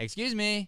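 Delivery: snooty and rude, pitched very high. Showing an actor how his line sounds: imitating a rude excuse me. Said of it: "You're going like this".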